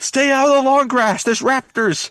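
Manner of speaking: mock warrior's battle cry. Retelling a movie scene where a character warns others: imitating Aragorn yelling. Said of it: "Aramir yells out".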